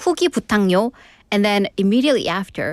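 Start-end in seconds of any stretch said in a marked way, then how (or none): 0.0-0.9 imitated Seoul accent. Retelling a Busan-born friend's request put in Seoul speech: imitating a friend's Seoul accent. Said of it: "Didn't I sound like a super soul".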